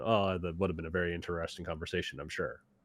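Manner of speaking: dripping with heavy sarcasm. Speaker shows how they could have answered him, very sarcastic tone. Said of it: "in a very sarcastic tone".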